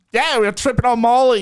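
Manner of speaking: put-on Australian accent. Imitating Australian podcast hosts: imitating Australian podcasters. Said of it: "I'm literally an Australian podcast".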